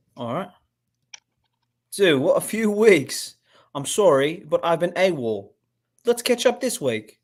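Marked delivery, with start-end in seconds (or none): 1.9-7.0 affected, put-on British accent. Reading out a text message as Peter, when asked for a British accent. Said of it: "Can you do a British accent?".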